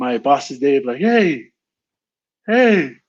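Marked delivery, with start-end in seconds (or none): 1.0-2.9 high-pitched, loud yelling call. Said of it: "I yelled out my mana-, my boss's name".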